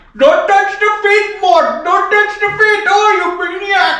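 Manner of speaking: high, loud, cartoonish shriek. Answering a kid's Mort voice: King Julien voice. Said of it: "I love doing Madagascar, Julian".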